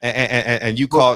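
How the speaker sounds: stuttering, tripping over words. Starting to reply to another speaker: stuttering. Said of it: "look at me stuttering".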